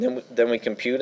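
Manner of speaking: voice cracking. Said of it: "as my voice cracks".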